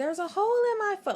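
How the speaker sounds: shrill, very high, frantic, panicked screaming. Telling a story about running home on one leg, the speaker re-enacts: retelling a scream.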